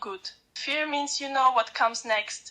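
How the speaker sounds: plain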